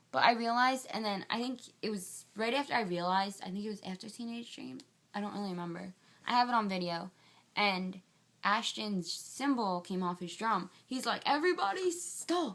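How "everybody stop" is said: botched put-on Australian accent, pitched very high. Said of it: "I can't do an Australian accent".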